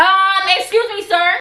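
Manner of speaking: hesitant, drawn-out, high, very loud, slow opening. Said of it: "I'm literally about to act this whole thing out".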